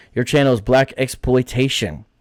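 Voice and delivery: ordinary talk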